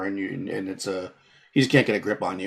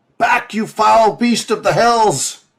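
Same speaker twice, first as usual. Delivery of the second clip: shrill, booming, very loud, high, drawn-out yell; 13 semitones higher, 9 dB louder than usual. Voicing a character driving back a beast: yelling as Altan. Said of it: "He yells".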